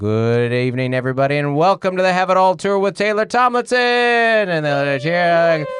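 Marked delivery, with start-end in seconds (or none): 0.0-3.8 put-on stage announcer show intro voice. Retelling opening her tour show on stage, in a put-on announcer voice. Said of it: "I'll turn on my announcer voice and I'll go".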